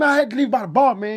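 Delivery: pushy, combative, aggressive, very high-pitched voice. Retelling how a man talked his way past club security: imitating an aggressive complaint. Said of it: "He was so aggressive about it".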